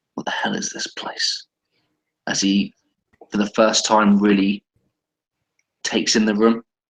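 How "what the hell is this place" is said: soft mutter to oneself, under the breath. Voicing a character taking in the room for the first time: muttering under breath. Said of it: "utters under his breath".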